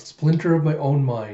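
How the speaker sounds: plain reading voice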